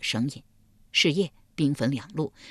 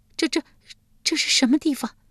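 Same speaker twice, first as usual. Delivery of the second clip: frightened stammering, much higher; 10 semitones higher than usual. Narrator reads a terrified man waking among ghost soldiers, frightened stammering. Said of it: "结结巴巴道".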